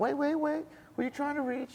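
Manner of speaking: put-on high, swooping southern accent, lady's voice. Retelling a phone call answered by a lady, in a southern accent. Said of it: "this lady with a southern accent".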